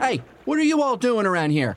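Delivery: very high, suspicious orc yell. Game narrator voicing a figure on a jet ski shouting at the players: suspicious shout. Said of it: "looks at you really suspiciously and shouts".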